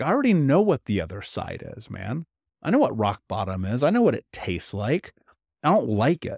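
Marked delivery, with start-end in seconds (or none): none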